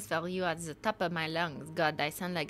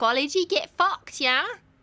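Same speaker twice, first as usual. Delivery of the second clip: loud, pitched-up, put-on British accent; 9 semitones higher, 7 dB louder than usual. Answering British people who object to the speaker speaking British; British accent. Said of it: "don't want me to speak British".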